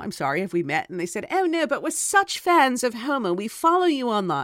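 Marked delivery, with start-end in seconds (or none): 1.3-4.5 bad, not-great put-on British accent, pitched up. Retelling two women from the United Kingdom saying they are fans, bad British accent. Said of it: "I'm not doing a great British accent".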